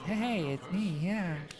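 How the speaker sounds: put-on young pixie-type girl voice. Showing the range of feminine voices they can do, in a young pixie girl voice. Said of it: "this is for more uh, younger, more pixie type kind of girls".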